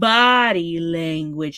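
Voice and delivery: low-pitched, slow, drawn-out impression voice.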